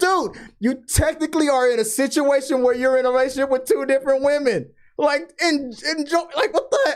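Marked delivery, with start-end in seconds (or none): 0.0-4.7 put-on pitched-up hollering. Retelling a reaction while watching an episode: imitating yelling at the screen. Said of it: "I was yelling at the screen".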